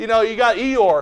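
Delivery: normal talking voice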